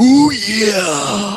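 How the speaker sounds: very high, loud wrestling cry, "yeah" stretched out. Asked for a Macho Man impression, the speaker gives it a try: Macho Man impression. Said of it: "Let me see if I can do it".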